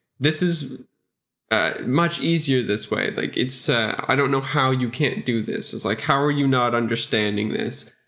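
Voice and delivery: ordinary talk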